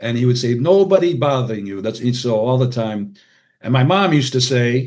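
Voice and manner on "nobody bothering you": put-on Hungarian accent. Quoting a dad's saying: Hungarian accent imitating dad. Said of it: "forgive my Hungarian accent".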